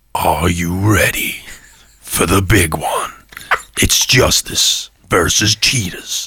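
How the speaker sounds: very low, deep, epic movie trailer announcer voice. Asked by the other speaker to do a movie voice, the speaker performs it. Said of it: "I want you to do like a movie voice".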